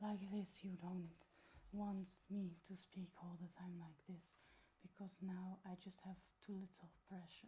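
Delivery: airy breathy voice. Showing how too much airflow sounds: very breathy sound. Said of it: "you get a very breathy sound".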